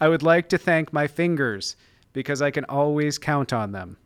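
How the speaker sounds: ordinary talk, nothing marked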